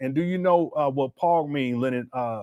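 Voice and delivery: plain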